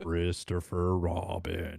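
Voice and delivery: very low, deep voice dropped right down. Speaker tries out a name in an Eeyore voice. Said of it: "like that".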